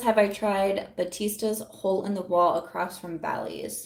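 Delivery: normal talking voice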